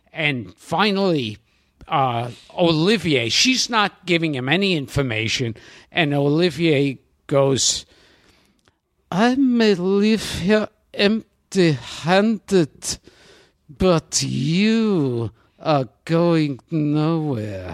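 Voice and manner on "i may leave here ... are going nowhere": slow, deliberate delivery, the word "you" drawn out. Acting out a film scene, doing every part: Laurence Olivier impression. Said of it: "where you do every part".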